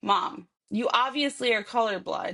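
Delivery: plain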